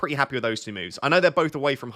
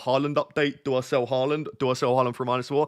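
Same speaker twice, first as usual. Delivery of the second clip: ordinary talk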